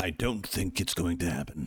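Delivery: whispered aside. A host opening his video about a show's second season, whispering.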